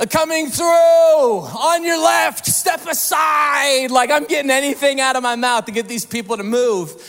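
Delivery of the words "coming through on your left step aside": high, slow shouting yell with on drawn out. Telling how you sprinted past people blocking your way, retelling a yell. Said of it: "and I'm like yelling like".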